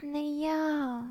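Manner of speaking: low murmur, half under breath. Maike answers a girl near tears who asks why she did it, murmured. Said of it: "murmelte ich".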